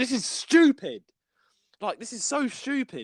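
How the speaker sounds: high, drawn-out, mock fed-up angry yelling. Retelling a frustrating game level at midnight: imitating own angry shouting. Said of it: "I was shouting".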